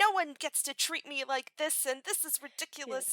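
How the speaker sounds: acted, muttered, furious grumbling. Retelling a film scene at a train station: imitating Norma angrily muttering. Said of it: "angrily muttering and saying".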